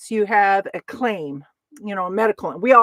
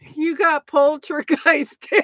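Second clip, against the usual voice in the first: talking through hard laughter, higher; 6 semitones higher than usual. Reacting to dan getting poltergeist, laughing hard while talking. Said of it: "I'm laughing so hard".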